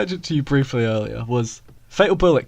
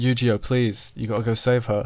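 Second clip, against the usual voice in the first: usual speaking voice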